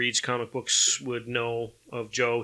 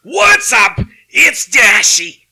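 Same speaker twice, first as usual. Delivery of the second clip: very high, very loud, shrill, drawn-out scream; 13 semitones higher, 18 dB louder than usual. Imitating a YouTuber's greeting for the others: Dashy yelling impression. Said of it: "He kinda yells and, and screams".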